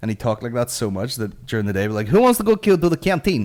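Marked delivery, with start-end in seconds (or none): 2.1-3.5 fake, very high, shrill, raised Russian accent. Retelling how a classmate talked all day, then mimicking a joke about the canteen in his Russian accent. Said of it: "he just spoke so much fucking Russian accent".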